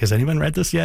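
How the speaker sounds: mock thrilled, eager. Retelling a woman's question on getting the first draft, imitating her excitement. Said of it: "she was so excited to".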